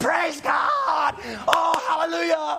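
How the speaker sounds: high, drawn-out, wild play-acted screaming. Retelling getting into his truck with his kids after being hired: retelling screaming like a wild man. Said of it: "I'm screaming like a wild man".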